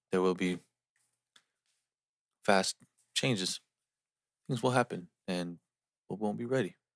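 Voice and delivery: robotic, machine-like movie robot cadence. Imitating how someone talks: imitating a robotic voice. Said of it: "He talks like the fucking robot from I Am Robot".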